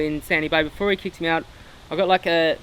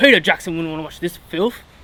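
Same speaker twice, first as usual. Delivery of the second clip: put-on comic, funny New Zealand Kiwi accent; 3 dB louder than usual. Retelling what the strip-searching customs official said: funny Kiwi accent. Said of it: "in a real funny Kiwi accent".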